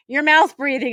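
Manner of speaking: put-on, high-pitched, called-out, jabbing voice. Retelling passing other runners during a class run: imitating own past yell. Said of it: "And I'm yelling".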